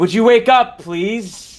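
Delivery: booming, projected, high-pitched voice. Player voicing Constellation, casting a spell to call into the lower decks, Constellation's booming voice. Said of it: "Constellation's voice now, booming loud".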